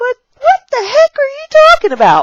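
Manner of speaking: put-on high, puzzled child's voice. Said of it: "and they're like".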